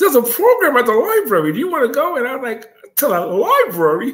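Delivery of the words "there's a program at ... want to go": high, mocking, taunting imitated voice. Retelling what a friend said to him, mocking Chucky's voice. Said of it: "Why do you make his voice sound like that?".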